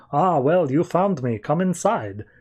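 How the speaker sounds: acted-out, put-on fake German accent. Retelling a story, the speaker voices a man behind a door in a put-on German accent. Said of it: "I'm not going to do that German accent ever again".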